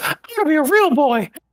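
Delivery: very high, squeaky cartoon voice. Speaking as Correct's character, Pinocchio voice. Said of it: "Why is he Mickey Mouse?".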